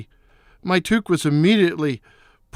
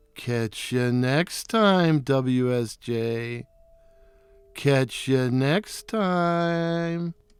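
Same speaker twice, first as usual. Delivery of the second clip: snide, snarky, mocking, insulting sneer; 5 semitones lower, 6 dB quieter than usual. Narrator reads the owl, her nemesis, calling from a fir tree: snarky, insulting voice. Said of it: "in her snarking, snarky, snarking and snarky, insulting voice".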